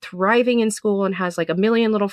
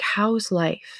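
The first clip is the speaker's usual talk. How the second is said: very mild, gentle, elder-like tone; 4 dB quieter than usual. Retelling what an elder asked when they sat down, imitating a very mild elder tone. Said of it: "the tone of voice, like, Mormons and Jehovah's Witnesses use. It's, like, very mild".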